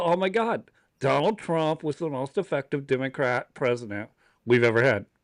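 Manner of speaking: ordinary delivery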